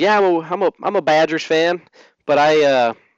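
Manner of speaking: put-on eastern Kentucky country accent. Retelling meeting a Wisconsin fan, the speaker quotes him in an eastern Kentucky accent. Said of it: "why are you make him sound like he's from eastern kentucky".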